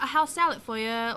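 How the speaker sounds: put-on British accent in a waiter-style voice. Retelling serving restaurant tables while putting on a british accent. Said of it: "I don't care if you know that I'm not British".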